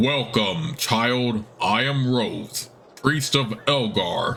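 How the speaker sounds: deep, very slow priest voice. A narrator voices a priest greeting a newcomer, in a deep, booming voice. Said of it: "He greets you with a deep, booming voice".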